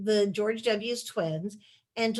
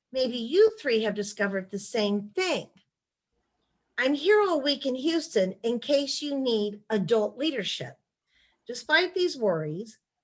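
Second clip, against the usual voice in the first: ordinary talk, nothing marked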